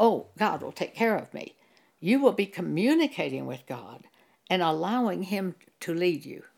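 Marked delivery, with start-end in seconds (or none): none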